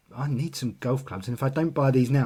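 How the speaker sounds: ordinary delivery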